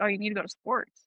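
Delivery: plain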